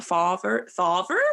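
West Country twang on "father". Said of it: "was so West Country of you".

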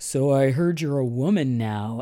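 fatherly, slow, stretched delivery. Retelling what a father said to his twelve-year-old daughter: imitating her father. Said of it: "a perfect impression of him".

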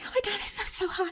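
put-on lovestruck, swooning, gushing young teen fan voice. Retelling what twelve-year-olds in the theater said whenever Leo appeared: imitating swooning twelve-year-olds. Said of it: "the twelve-year-old sitting in front of me were like".

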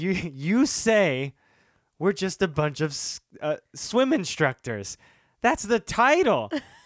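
high, loud freaking out, rushing the words. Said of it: "freaking out".

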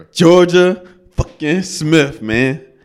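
shouting. Naming an artist excitedly to the other speakers, yelling into the mic. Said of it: "yelling into the mic now".

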